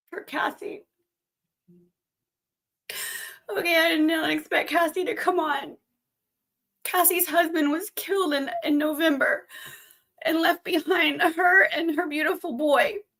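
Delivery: voice catching, near crying. Speaker talks about a woman whose husband was killed, voice choking up. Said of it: "Sorry, I might cry".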